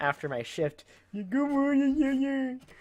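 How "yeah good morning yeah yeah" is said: much higher-pitched mocking sing-song voice. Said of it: "I was making fun of him".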